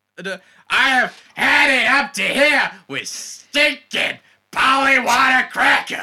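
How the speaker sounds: very high, shrill, indignant shouted outburst. Asked for the line from the original film, give it in a put-on shouty film character voice. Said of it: "What's the line that he says in the original?".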